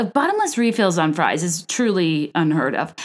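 normal talking voice

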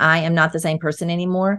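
ordinary talk, nothing marked

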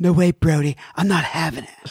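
laid-back put-on voice.

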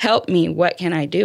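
put-on desperate, pleading voice. Retelling a late-night phone call asking for help: retelling own desperate plea. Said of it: "desperate sounding voice".

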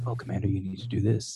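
hushed, very quiet, deep everyday talking voice. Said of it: "talking voice, which is really low".

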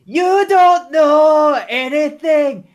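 drawn-out, very high, very slow, loud woman's voice. Asked for a nice female voice, doing an impression of Nikki Cross. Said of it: "Nice impression of Nikki Cross".

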